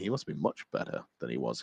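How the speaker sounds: dry, sardonic, tongue-in-cheek sarcasm. Commenting on a unit's points going up to eighty-five: sarcastic. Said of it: "he says sarcastically".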